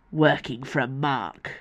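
soft words forced out through gritted teeth. A narrator reads Reynard's line to Icarus, through gritted teeth. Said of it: "said between gritted teeth".

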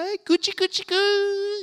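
put-on very high, slow cooing baby talk, "goo" stretched. Describing people coming over to Ava, the speaker acts out their little baby-talk voice. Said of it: "the little voice".

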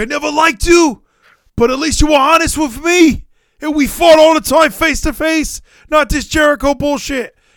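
high, loud, shouted promo voice. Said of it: "And Eddie's gonna be like".

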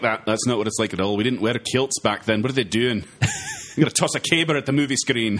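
put-on Scottish accent. Imitating how Scots might react to the movie Braveheart: put-on Scottish accent. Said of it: "you're speaking in that accent".

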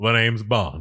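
loud, belted lounge impersonator voice. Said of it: "It's just [name]".

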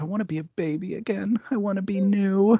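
tearful, close to crying. Speaker retelling a story scene after the alligator attack, imitating Susan getting teary. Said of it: "She gets really teary".

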